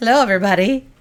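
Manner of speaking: hoarse, cracking voice. Showing how a lost voice sounds while greeting everybody: cracking raspy voice. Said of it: "I feel like it's cracking".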